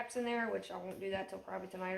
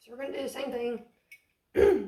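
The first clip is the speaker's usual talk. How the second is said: very loud voice breaking and cracking; 4 semitones higher, 12 dB louder than usual. Explaining the next step now that they are in the pool, voice cracking. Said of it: "Sorry, voice crack".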